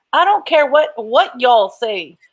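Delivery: slow, well-done Texas drawl. Restating a point during a discussion, in a texas accent. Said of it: "Let me do this in the in the Texas accent. Let me do it the right way".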